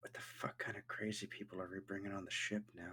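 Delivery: very quiet, hushed mutter under the breath. A game master voices a character muttering to himself, muttering softly. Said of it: "You hear him mutter".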